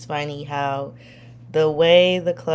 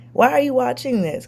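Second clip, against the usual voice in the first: put-on high, raised yell; 9 semitones higher than usual. Speaker recalls reacting while someone watched a violent episode, retelling a yell. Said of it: "I'm like yelling".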